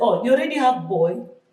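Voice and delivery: put-on accent from Uganda. Retelling what the doctor at the scan said: imitating a Ugandan accent. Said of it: "with the Ugandan accent".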